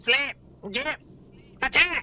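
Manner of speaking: fierce, aggressive, high-pitched yelling skeleton voice. A game narrator voices three skeletons attacking the players, aggressive skeleton yelling. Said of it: "aggressively yell at you in their skeleton voices".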